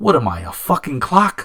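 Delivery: loud, swooping put-on New York attitude. Retelling what he said back to a guy, with retold East Coast attitude. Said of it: "you know the attitude".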